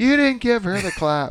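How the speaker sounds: very high-pitched, shrill hollering yell. Retelling a phone call, the mother yelling in the background: imitating someone yelling. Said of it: "his mother's in the background yelling".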